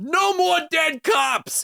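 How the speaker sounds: high, slow, drawn-out shout from afar.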